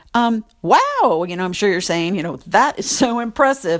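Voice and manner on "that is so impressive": dry, sarcastic, mocking tone with attitude. Imitating what the listener is probably saying: imitating a sarcastic remark. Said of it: "but you're saying it all sarcastic".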